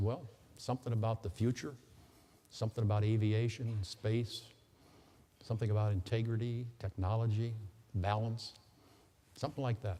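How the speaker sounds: ordinary delivery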